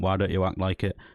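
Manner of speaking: plain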